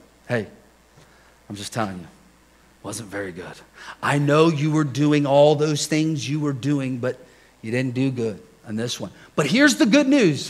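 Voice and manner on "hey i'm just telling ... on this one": acted, unruffled, very calm, steady delivery. Retelling what his wife told him about his preaching: imitating wife speaking very calmly. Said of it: "Very calmly, she's like".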